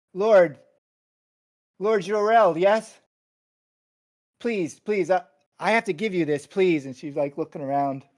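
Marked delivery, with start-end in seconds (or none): 0.2-6.9 very loud, high, stammering nervous pleading. Narrator voices a woman who stops in front of the player, nervous pleading. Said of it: "She looks really nervous".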